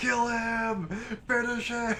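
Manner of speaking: mock, shrill, very high full-lung scream. Streamer retelling what he screamed at the top of his lungs: retelling a scream. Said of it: "he's screaming at the top of his lungs".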